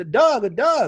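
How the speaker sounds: high Baltimore drawl, "dog" pronounced "Doug". Retelling a conversation with a woman in Baltimore; imitating a Baltimore accent. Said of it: "She said".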